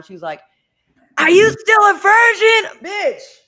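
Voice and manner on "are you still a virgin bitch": very high, shrill, drawn-out, loud botched whisper. Retelling what a relative said on the bus, imitating a failed, too-loud whisper. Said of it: "horrible at whispering".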